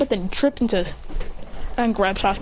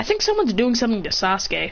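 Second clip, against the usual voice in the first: ordinary talk, nothing marked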